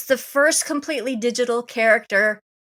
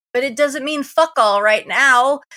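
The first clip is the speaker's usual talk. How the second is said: exasperated, frustrated, fed-up tone. Discussing a movie with another speaker, sounding frustrated. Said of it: "I hear the frustration in your voice".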